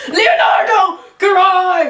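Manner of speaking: loud, high-pitched yell.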